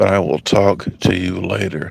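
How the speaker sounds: rough, creaky, quiet late-night radio voice, lulling.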